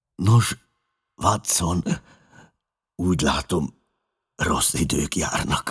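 weak, feeble, frail-sounding voice. A bedridden man greets the friend who has just come in, in a weak voice. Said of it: "mondta gyenge hangon".

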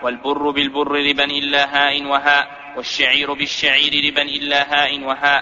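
normal talking voice

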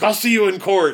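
high-pitched, furious, fuming tone. Recapping an episode, retelling a character's angry threat: acting out being super mad. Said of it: "He's super mad about it".

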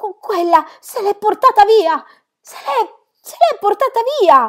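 very high, shrill yell, full of emotion. Peter yells to his mother and grandmother with all his emotion. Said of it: "urlò".

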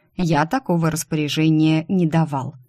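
ordinary delivery

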